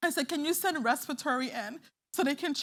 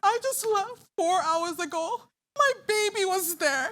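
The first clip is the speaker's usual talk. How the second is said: tearful crying speech, words pushed through tears; 5 semitones higher, 5 dB louder than usual. Retelling what she told the guard when the baby was gone: reenacting own crying. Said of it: "I am crying".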